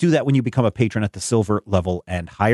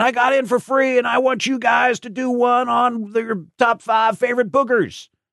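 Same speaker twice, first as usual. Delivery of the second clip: put-on scream, much higher, slower; 14 semitones higher than usual. Mimicking someone shouting from the back row at a show: imitating someone screaming.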